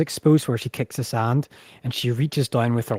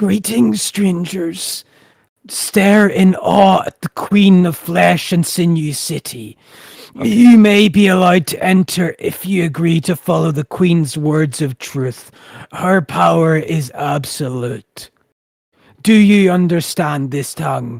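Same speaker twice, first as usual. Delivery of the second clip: loud, gruff, painful rasp, sandy-sounding voice; 6 semitones higher, 8 dB louder than usual. Narrator voices a queen greeting strangers at her city gates; painful, gruff, sand-filled voice. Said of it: "in a kind of painful, gruff, sand-filled mouth".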